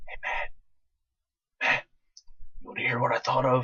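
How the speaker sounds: slow, breathy, secretive whisper. Retelling whispering a joke to a friend in class: retelling a whisper. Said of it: "I whispered to my friend Matt".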